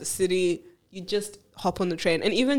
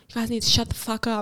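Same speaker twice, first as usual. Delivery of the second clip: put-on angry girl voice, much higher-pitched; 3 semitones higher than usual. Retelling what a girl on the train told the speaker's loud group: imitating an angry girl. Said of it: "she got pissed off at us".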